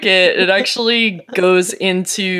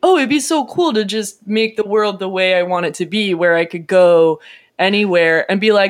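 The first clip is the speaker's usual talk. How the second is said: usual speaking voice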